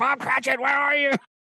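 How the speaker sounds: very high, shrill, screaming miser voice. Reading an interview in a Scrooge voice: screaming Scrooge voice. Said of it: "He's screaming".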